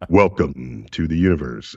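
very low, deep planetarium narrator voice. A planetarium director demonstrates narrating a book's image captions: planetarium narrator voice. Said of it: "I use my planetarium voice".

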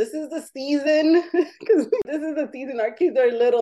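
high, laughing voice with a pleading tone. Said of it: "letting him know".

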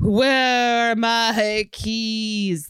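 very slow, drifting, lost-sounding ghost voice. Joking about being a forgetful ghost after dying, impression of herself as ghost. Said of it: "That's my impression of me as a ghost".

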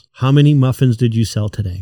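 ordinary delivery

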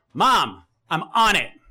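yelling.

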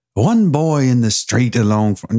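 failed put-on Scottish accent, breaking down. Asked to read a quoted line aloud in a Scottish accent, attempted Scottish accent. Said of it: "You want to try to read it with a Scottish accent?".

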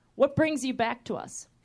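usual speaking voice

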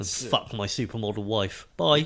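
ordinary talk

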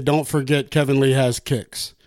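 ordinary talk

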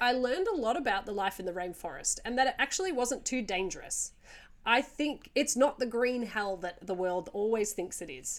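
ordinary talk

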